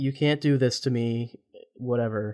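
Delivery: normal talking voice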